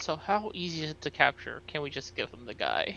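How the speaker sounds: very quiet, hushed, secretive whisper. Playing a character in a role-play, leaning over to speak, whispering. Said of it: "I sort of lean over and whisper".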